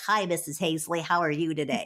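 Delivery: silly put-on cartoon character voice. Retelling how seventh grade boys greeted Missus Hazley: imitating a cartoonish voice. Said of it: "They had these kind of cartoonish voices".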